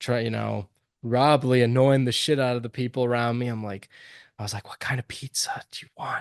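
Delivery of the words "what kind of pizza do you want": hushed whisper. Retelling whispering to a girlfriend in a movie theater: imitating a whisper. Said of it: "so I'm whispering to my girlfriend".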